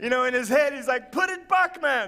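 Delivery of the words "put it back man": put-on slow, high-pitched voice with Jamaican accent. Retelling what a man on the roof said: Jamaican accent. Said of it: "I don't know why it sounded Jamaican".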